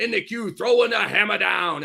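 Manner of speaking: high, slightly gravelly announcer voice. Giving a small taste of the announcer's growl: gravelly Austin Carr voice. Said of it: "the full throat Austin Carr where he gets all gravelly".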